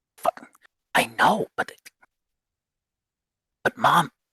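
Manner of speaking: slow, hushed, secretive whisper. Voicing a boy huddled with his brother in the corner: whispering. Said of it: "You hear him whispering".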